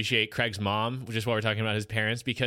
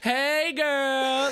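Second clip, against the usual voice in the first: play-acted fake-friendly voice, pitched up, with "girl" stretched out. Recapping a scene, quote the character's muttered greeting: Mrs. Parker's fake-friendly greeting. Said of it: "it just being so fake".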